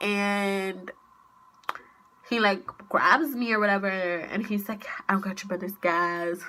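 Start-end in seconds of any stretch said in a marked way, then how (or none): 5.1-6.4 amused, said through laughter. Retelling what he said when she came inside: imitating someone laughing. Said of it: "laughing like the shit's funny".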